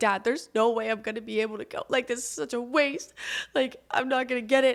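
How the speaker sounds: sobbing, crushed voice, talking through tears. Retelling what was said to Dad during shoulder treatment, retelling own sobbing. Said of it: "I'm just sobbing".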